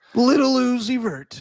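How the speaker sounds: game announcer delivery. Performing a requested announcer read about a halftime show: Kevin Harlan impression. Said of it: "me doing a Kevin Harlan impression".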